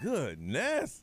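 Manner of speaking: acted-out tired, sleepy, drowsy voice. Teasing a caller who hasn't had coffee, imitating a tired caller. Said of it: "right now you sound like".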